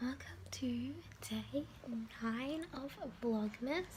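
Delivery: soft, tired, worn-out whisper. Opening a vlog, just back from a night out: tired whisper. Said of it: "I'm like whispering because I'm like really like tired".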